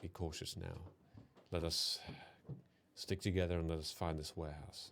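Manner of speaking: low breathy whisper, kept quiet. During the group's game, a player voices Lila's line, Lila in a lower voice. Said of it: "in a lower voice".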